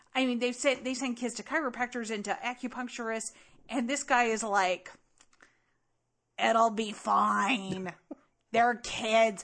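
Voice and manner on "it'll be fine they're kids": slow drawl, fine stretched out.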